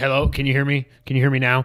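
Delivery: ordinary delivery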